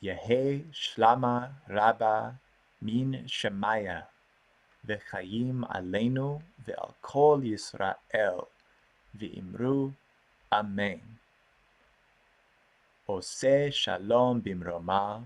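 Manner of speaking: slow, measured, deliberate reading aloud.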